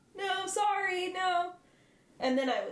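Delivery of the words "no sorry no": high, frantic, nervous, anxious shouting. Describing what they would do if followed, the speaker acts out anxious shouting. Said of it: "very anxiously".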